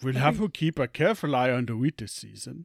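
loud put-on German accent. Reading a scene line after being asked to try a German, German accent. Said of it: "A German?".

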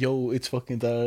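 ordinary delivery

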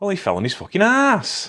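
put-on broad Lancashire accent, loud, very high-pitched and swooping. Retelling a wrestler's line after a fall: Davey Boy Smith, broad Lancashire accent. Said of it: "in his broad Lancashire brogue".

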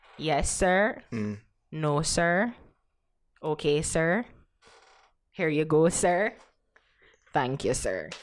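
deep, respectful, deferential, polite voice. Speaker shows how they answer police officers: deep monotone. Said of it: "it's just monotone".

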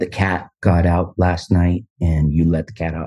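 very low, disappointed and angry tone. Imitating her sister when she gets upset, in a put-on very low tone. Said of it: "she does the very like low tone".

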